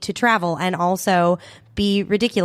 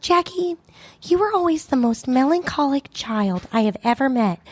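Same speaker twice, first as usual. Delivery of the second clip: put-on Midwestern accent; 6 semitones higher than usual. Retelling what mom said over dinner: imitating mom's Midwestern accent. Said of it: "looks and sounds like she's straight out of the Midwest".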